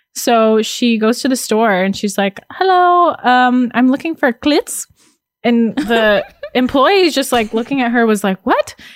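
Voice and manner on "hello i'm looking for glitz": put-on thick South American accent, slow and high. Retelling her mom asking at the store for glitz, imitating thick South American accent. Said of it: "She has a very thick South American accent".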